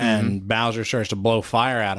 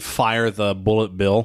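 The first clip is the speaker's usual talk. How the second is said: ordinary talk, nothing marked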